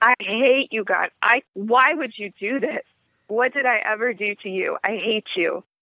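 ordinary talk

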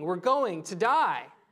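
mock screaming, acted-out scream. Describing an expert meant to keep you safe, retelling a scream. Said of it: "they start screaming".

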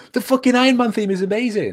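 shrieking, very high-pitched screaming outburst. Retelling watching a video about film music: imitating own screaming. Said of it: "I was screaming, going".

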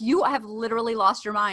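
ordinary talk, nothing marked

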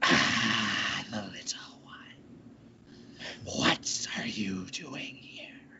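whispered, breathy, echoing hiss. Narrating a scene in a cave and voicing her greeting, hissing voice. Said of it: "hissing sort of voice sort of echoing".

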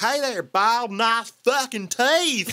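put-on high-pitched, heavily twanged-out accent, laid on thick. Imitating a film character's line in a strong twangy accent. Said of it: "her accent gets even more twanged out".

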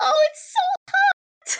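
put-on very high, teeny little baby voice. Recapping a story, the speaker voices a character in a tiny baby voice. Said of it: "We have his little tiny baby voice".

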